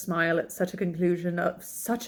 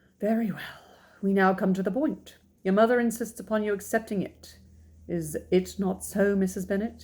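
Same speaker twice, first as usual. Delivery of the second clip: ordinary delivery, nothing marked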